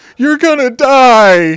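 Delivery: shrill, loud sobbing wail, die drawn out. Retelling what the youngest kid said after a fall: imitating a sobbing kid. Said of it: "he's just sobbing".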